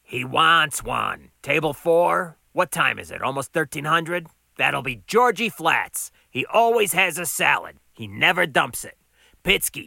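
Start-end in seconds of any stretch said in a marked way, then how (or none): none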